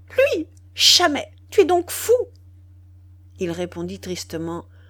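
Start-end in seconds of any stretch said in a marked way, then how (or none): 0.2-2.2 very high, shrill, loud animal-like cry. A woman answers a man's news, with an animal-like cry. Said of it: "Elle poussa une sorte de cri de bête".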